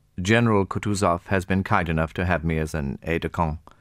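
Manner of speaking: ordinary delivery, nothing marked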